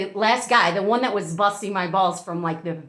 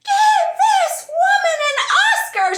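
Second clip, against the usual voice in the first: screaming, higher and louder; 7 dB louder than usual. Retelling how the woman on the boat reacted to the reveal: imitating someone screaming. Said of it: "she started screaming".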